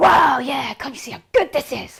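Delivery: abrupt, sudden, loud, enthusiastic, excited burst. Retelling how a teacher broke a lulling voice: imitating a sudden excited outburst. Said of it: "and then suddenly he'd go".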